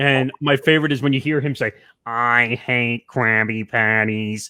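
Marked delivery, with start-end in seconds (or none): 2.0-4.5 very slow, glum, sour, drawn-out cartoon moan. Talking about a favorite SpongeBob scene, quoting a character: Squidward impression. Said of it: "a really good Squidward impression".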